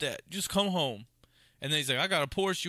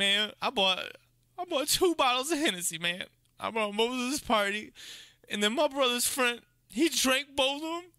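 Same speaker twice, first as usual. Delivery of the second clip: put-on high, tearful, crying, drunken voice; 7 semitones higher than usual. Retelling what a drunk rider said in the car: imitating a drunk crying man. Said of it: "here's why he's crying".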